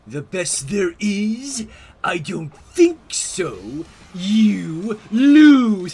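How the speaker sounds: booming, slow, big, drawn-out voice. Quoting a SpongeBob meme about forgotten pickles: Bubble Bass voice. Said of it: "I can't do the laugh all that good".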